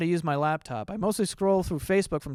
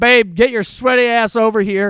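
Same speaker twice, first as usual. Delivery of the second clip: very loud, booming yell; 3 semitones higher, 10 dB louder than usual. Retelling calling to a girlfriend who had AirPods in: retelling a loud yell. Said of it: "I very loudly yelled to her".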